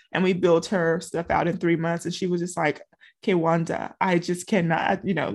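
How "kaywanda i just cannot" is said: bad, horrible, put-on Nigerian accent. Retelling what a minister said to the speaker, in a horrible Nigerian accent. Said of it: "I'm doing a horrible Nigerian accent".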